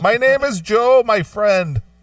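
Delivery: put-on heavy Indian accent. Retelling how a caller named Joe introduced himself, in a thick Indian accent. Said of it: "thick, thick Indian accent".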